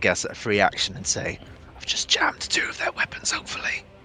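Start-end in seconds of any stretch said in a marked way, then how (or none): 1.8-3.8 hushed, whispered aside. Playing a character shimmying past Gerhardt, saying this in a whisper. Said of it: "I whisper with".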